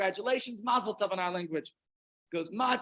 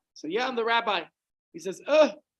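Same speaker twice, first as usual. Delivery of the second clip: ordinary talk, nothing marked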